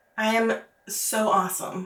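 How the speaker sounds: mock dry, slow, tongue-in-cheek sarcastic bragging tone. Retelling what one always said at work: retelling own sarcastic boast. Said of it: "Which I was always super sarcastic".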